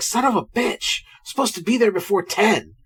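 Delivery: harried, stressed, fed-up man cursing. Retelling a movie scene, imitating a stressed man. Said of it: "He's like".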